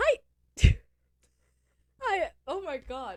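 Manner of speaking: high, loud voice, cracking and giving out. Greeting listeners and noticing their own voice is off; broken voice. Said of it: "It's my voice is broken".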